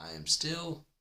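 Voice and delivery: cracking, breaking voice, very high and loud. Speaking to an audience while still recovering from yesterday, voice cracking. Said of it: "See, heard it again".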